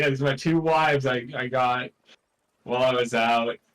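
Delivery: ordinary delivery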